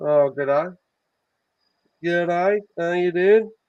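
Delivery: terrible put-on Australian accent. Host greeting a guest, showing how to talk to Australians: worst Australian accent ever. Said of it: "The worst Australian accent ever".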